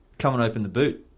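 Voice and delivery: ordinary talk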